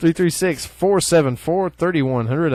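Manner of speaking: loud put-on radio announcer voice and delivery. Giving out the store owner's phone number, radio announcer voice. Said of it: "I just jumped in a radio voice".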